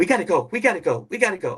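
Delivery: frightened, scared, agitated, insistent, repeating voice. Retelling how his daughter got agitated, imitating her scared agitated urging. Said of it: "my daughter starts getting really agitated".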